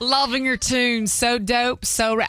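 attempted put-on Australian accent coming out country. Speaker rereading a listener's message from australia; country accent. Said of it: "I'm giving it a country accent".

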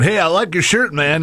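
high-pitched cartoon boy voice, full character. Retelling how a voice actress greeted a kid wearing a Bart shirt: Bart Simpson voice. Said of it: "in the Bart Simpson voice".

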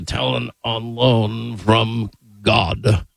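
very slow delivery, each word drawn out. Repeating a catchphrase the way Rush said it: booming Rush Limbaugh voice. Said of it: "in his booming voice".

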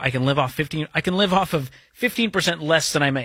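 plain

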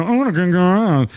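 mild mocking tone.

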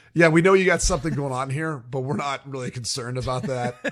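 ordinary talk

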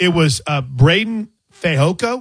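very slow, careful, deliberate delivery. Saying a name carefully so he won't get in trouble: very slow. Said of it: "I said that very slowly".

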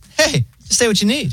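very high, laid-back phone robot voice. Retelling calling the pharmacy's automated line, imitating a chill robot voice. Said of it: "the robot voice is like so chill".

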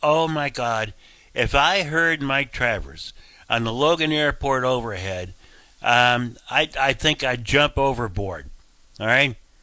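ordinary talk

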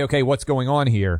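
plain

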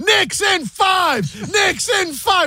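put-on drunken yelling, high, slow bellow.

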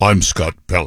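self-important put-on TV news anchor voice. Mocking how Scott Pelley talks in interviews: imitating Scott Pelley. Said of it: "he talks like this in the interviews".

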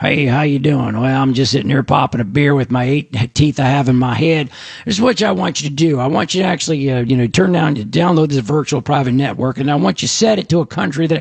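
put-on, stretched-out Texas drawl. Imitating someone explaining how to set up a VPN, Texas drawl. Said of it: "with a Texas drawl".

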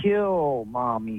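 put-on evil little doll voice. Telling Rich about a talking doll, imitating what it said: imitating a doll's evil little voice. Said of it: "in an evil, little, wicked voice".

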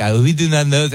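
put-on French accent. Retelling how french guys reacted after the stage talk, in a put-on french accent. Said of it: "I'm doing a perfect accent".

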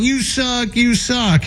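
put-on high-pitched taunting yell. Arguing that she can yell insults at him, imitating someone yelling. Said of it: "she can yell at him all you want".

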